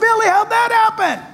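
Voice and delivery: high, shouted delivery. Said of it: "we would shout back".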